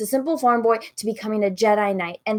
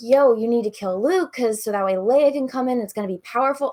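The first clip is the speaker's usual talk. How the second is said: ordinary delivery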